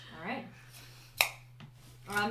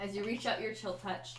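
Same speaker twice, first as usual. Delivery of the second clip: usual speaking voice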